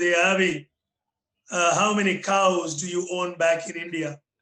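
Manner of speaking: acted big, loud, booming voice. Retelling what a village chief asked during a visit, imitating a loud booming voice. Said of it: "in his loud booming voice".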